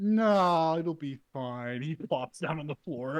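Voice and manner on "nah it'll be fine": put-on slurred, woozy, very slow drunken-sounding speech. Voicing a hurt character insisting he's fine: slightly drunk slurring. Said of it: "he sounds slightly drunk".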